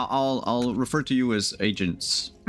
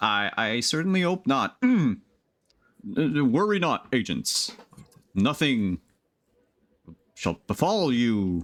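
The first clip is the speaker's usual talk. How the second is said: hollow, unconvincing, faked reassuring put-on voice. Voicing a character speaking in the agents' ears: put-on voice, not inspiring confidence. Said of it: "this is the put on vo-, like, the vo-, like, the voice that, that they're putting on".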